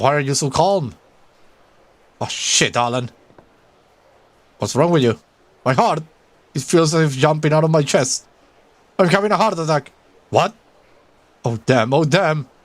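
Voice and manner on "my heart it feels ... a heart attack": alarmed, frightened, panicked cry. Gasping that the heart is jumping out of the chest: panicked. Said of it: "Calm down".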